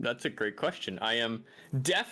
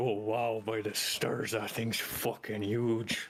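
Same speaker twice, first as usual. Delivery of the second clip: mumbled under breath. In a game scene, the speaker voices Aster muttering under his breath. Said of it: "you hear Aster sort of under his breath".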